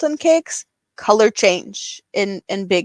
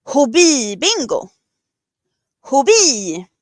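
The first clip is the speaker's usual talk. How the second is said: put-on Swedish accent, pitched higher; 4 semitones higher than usual. Imitating how a Swedish bingo host says a phrase: imitating Kristina. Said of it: "channel my inner Kristina and see if I can say it the way she says it".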